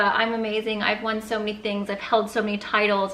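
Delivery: ordinary talk, nothing marked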